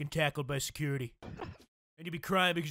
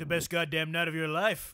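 ordinary talk

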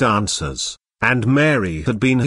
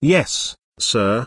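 sheepish, abashed, embarrassed tone. A secretary, gently corrected by Marlowe, answers him abashed. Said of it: "his secretary replied, abashed".

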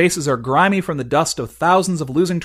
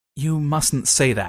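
very softly spoken, very soft and hushed; 4 dB quieter than usual. Reading a story, the prince answers his dead father very softly. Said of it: "says the prince, very softly".

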